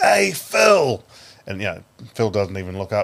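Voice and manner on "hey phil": very high, all-out hollering yell. Retelling a fan in a packed grandstand calling to a player: imitating a fan yelling. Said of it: "He yells out as loud as he can".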